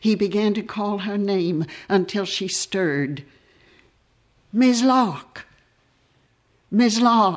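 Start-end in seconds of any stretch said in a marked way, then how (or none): 4.5-7.4 horrified, piteous pleading, high and slow. Reading a story where a man bends down to call a woman's name: horrified, beseeching call. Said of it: "in a horrified, piteous, beseeching voice".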